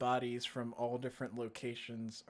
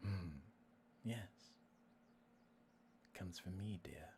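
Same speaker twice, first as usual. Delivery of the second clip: eerie, creepy, very hushed, barely there whisper; 4 semitones lower, 13 dB quieter than usual. Answering the question about where someone's power comes from, in a creepy voice. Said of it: "you creepy voice".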